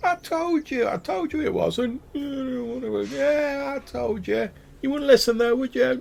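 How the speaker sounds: very high voice, trailing away into the distance. After a bow, he struts off toward the bushes; voice trailing away. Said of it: "you hear his voice trailing away".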